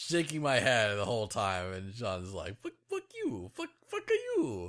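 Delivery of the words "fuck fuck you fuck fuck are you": very high put-on voice with wide swooping pitch. Retelling an argument over predictions, speaker quotes the other person cursing: Mario voice. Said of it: "in a Mario voice".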